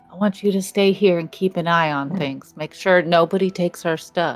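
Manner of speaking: hushed whisper. Reenacting whispering in a pet's ear, whispering. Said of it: "I'm whispering in his ear now".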